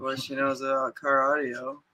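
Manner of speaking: low, dropped mock announcer voice. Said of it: "Did your voice just drop, like, forty-five octaves".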